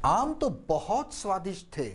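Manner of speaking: extra weight placed on the word 'बहुत'. Rehearsing a story line, stress on 'बहुत'. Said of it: "बहुत को stress होगा".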